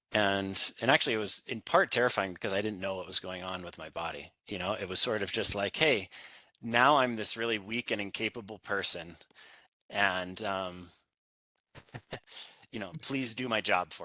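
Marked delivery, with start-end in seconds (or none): none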